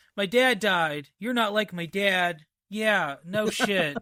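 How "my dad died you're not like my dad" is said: put-on one-note flat monotone, pitched higher. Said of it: "he is a very one note".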